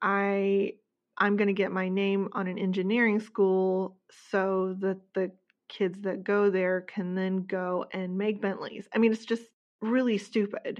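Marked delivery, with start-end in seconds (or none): none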